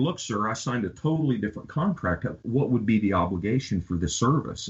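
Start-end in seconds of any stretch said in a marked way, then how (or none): none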